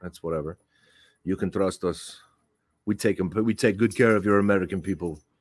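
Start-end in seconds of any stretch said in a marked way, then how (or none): 1.2-5.2 mock Russian-sounding accent. Speaker acting out the Russians reassuring the Americans, in a Russian-sounding accent. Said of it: "I sound Russian there".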